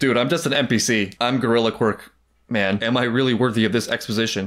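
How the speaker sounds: usual speaking voice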